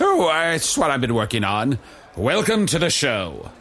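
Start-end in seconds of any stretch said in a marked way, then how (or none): 2.2-3.4 put-on old-timey ringmaster voice, higher and slower. Showing a voice they've been working on, the speaker does an old-timey ringmaster voice. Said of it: "It's sort of an old-timey ringmaster guy".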